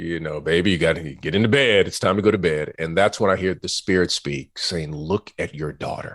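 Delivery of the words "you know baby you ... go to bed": play-acted firm, no-nonsense, stern fatherly voice. At three a.m., a father retells telling his daughter to bed in a stern fatherly voice. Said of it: "I said with a stern fatherly voice".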